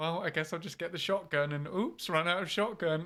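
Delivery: put-on calm, unbothered tone. Imitating the other speaker calmly running out of shotgun ammo: imitating someone calmly unbothered. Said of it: "just roll with it".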